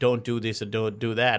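normal talking voice

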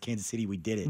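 ordinary talk, nothing marked

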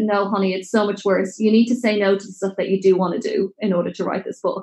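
ordinary delivery

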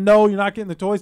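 yelling. Retelling a mom at Walmart scolding her screaming kid: imitating a mom yelling. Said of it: "she's yelling".

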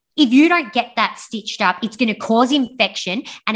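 put-on rude, nasty tone. Speaker quotes a woman who turned rude toward the speaker; imitating a rude tone. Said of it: "her tone went from grumpy to asshole".

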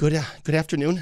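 audibly nervous voice. On the radio, showing how a nervous speaker would sound: nervous-sounding. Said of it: "If I did, I probably wouldn't be on the radio right now, or it'd sound more like this".

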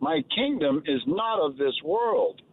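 ordinary delivery

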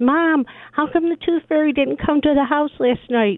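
play-acted child voice, high and hollering. Retelling a tooth fairy story on a call, imitating grandson yelling. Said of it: "So he yells".

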